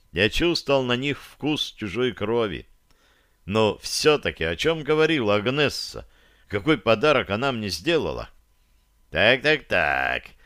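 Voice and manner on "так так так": sarcastic, mocking, much lower. A narrator reads a man's opening remark to another man, sarcastic. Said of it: "язвительно проговорил Дирон".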